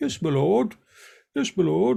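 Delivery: mock upper-class voice. Mocking how another person talks with nose in the air: imitating Benjamin's toffee talk. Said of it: "he's so toffee".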